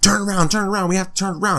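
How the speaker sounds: put-on insistent high-pitched screaming, repeated over and over. In a review, speaker acts out a woman screaming at a man, imitating her screaming. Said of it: "she's screaming at him".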